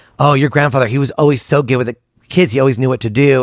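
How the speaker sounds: plain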